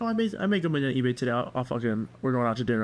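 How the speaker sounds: ordinary delivery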